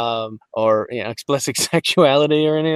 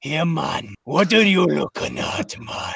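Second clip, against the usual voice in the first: rasping put-on Jamaican patois troll voice; 3 dB quieter than usual. Speaker showing how they voiced a troll in jamaican patois, raspy jamaican accent. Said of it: "you put on that Jamaican, and then you got to get it all raspy".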